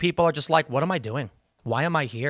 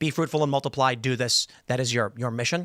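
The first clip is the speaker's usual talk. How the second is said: normal talking voice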